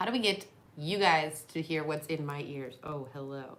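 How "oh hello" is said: put-on seductive voice, lower and quieter. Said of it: "when you talk like this".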